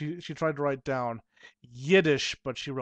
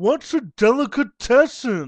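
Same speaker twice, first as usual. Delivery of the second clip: very loud, high, snobbish, snooty put-on voice; 8 semitones higher, 10 dB louder than usual. Retelling what the other person asked him, in a snooty man voice. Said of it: "It's the Snooty Man voice".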